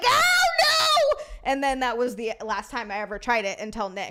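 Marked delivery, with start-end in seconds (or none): 0.1-1.2 put-on, very high, loud, shrieking shout. Retelling a painful attempt with a guy: imitating own past scream. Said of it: "She just screamed right directly in a microphone".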